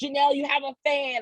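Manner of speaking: loud high-pitched hollering. Retelling a stranger at an arena calling out her name, imitating someone hollering. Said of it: "he's hollering".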